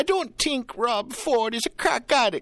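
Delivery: put-on very high-pitched voice with a Jamaican accent. Retelling a radio call-in from a woman caller, imitating her Jamaican accent. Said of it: "the Jamaican accent and everything".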